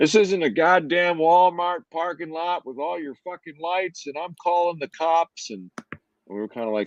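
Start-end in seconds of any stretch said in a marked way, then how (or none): 0.0-5.5 mock very high-pitched, furious, angry screaming. Retelling how an unruly neighbor came over: imitating a neighbor screaming. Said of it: "just started screaming at us".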